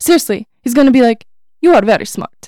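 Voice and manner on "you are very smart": mocking put-on Italian accent. Retelling how she mocked his Italian accent, in a mock Italian accent like Gru. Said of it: "She is mocking his Italian accent".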